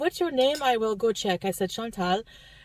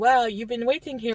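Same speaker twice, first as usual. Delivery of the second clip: put-on cute French accent. Retelling what a hospital volunteer said: cute French accent. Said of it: "a little cute French".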